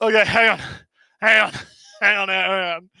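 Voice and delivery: laughing too hard to talk, breathless. Reacting to a joke between the others, laughing too hard to talk. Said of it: "I have to breathe".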